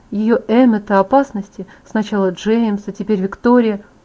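plain reading voice

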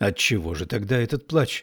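plain

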